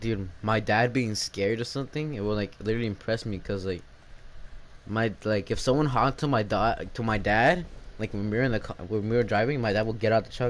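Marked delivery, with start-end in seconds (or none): none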